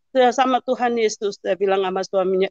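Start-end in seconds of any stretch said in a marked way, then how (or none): none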